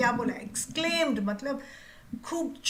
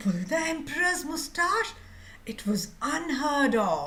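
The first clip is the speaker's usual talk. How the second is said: shocked, stunned reading in disbelief; 4 semitones higher than usual. Showing how a line should be read aloud: shocked, stunned expression. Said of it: "When you are stunned, you are shocked. ... So that expression has to come".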